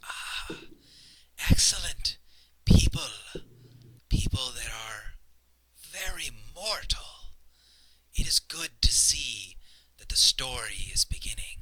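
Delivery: hoarse, raspy voice calling from far off. Narrating the scene, a far-off voice calls out to the people: raspy distant voice. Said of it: "raspy voice from a long way off".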